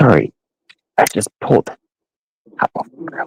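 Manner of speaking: under-the-breath whispering. Apologizing after pulling the top off a hot grill: whispering. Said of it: "I was whispering".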